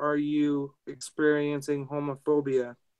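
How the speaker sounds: normal talking voice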